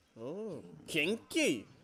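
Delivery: put-on chain-smoking cat voice. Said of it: "a chain smoking cat".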